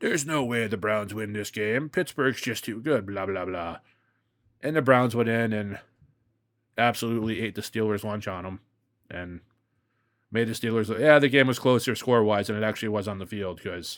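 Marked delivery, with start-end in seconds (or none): 0.0-3.8 play-acted, smug, condescending, know-it-all expert tone. Mocking the tv crew's confident prediction: imitating smug commentators. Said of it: "they all very smugly, like they're experts".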